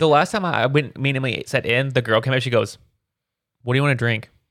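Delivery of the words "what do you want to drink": put-on flat, sad, emotionless voice. Retelling what a server asked at a restaurant: imitating an emotionless server. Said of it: "pure sadness, no emotion".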